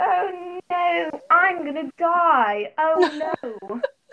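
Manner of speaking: high, loud put-on British accent, exclaimed. Retelling how everyone would still react, done in a british accent. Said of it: "I kind of did a British accent there".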